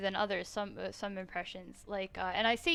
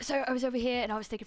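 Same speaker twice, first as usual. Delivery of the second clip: choppy speech in tiny, short bursts; 3 semitones higher than usual. Showing how Mumbo talks, Mumbo impression in short bursts. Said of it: "Mumbo talks in tiny short bursts. He's like".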